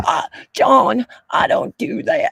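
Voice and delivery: scratchy, rough, creaky woman's voice. Imagining her reply when John brings it up: imitating her voice. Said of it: "I can't even do her voice".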